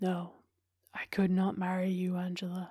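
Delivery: flat, lifeless, quiet, dull voice, drawn right out. After a silence, he answers the woman: quiet, dull, very slow. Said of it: "It said very slowly".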